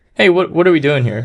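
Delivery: annoyed, provoking tone. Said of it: "kind of like that tone of".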